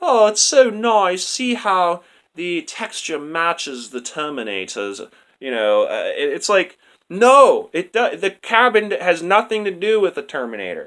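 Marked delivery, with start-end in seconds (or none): 0.0-5.1 put-on British-accented speech. Speaker imitating foreign people in the movie, in a British accent. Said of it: "talking in British accents".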